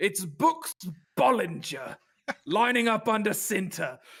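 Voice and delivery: put-on English man's accent. Talking quarterbacks, imitating English blokes announcing one: English accent. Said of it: "as I do my grade A English accent".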